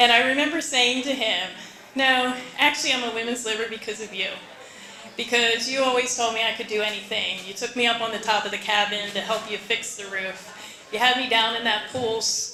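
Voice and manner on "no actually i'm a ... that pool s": plain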